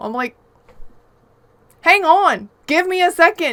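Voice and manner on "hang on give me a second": mock annoyed, fed-up, slow, high exasperated yell. Retelling being the last one alive amid backseat gaming: retelling own angry yelling. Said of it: "I was so mad".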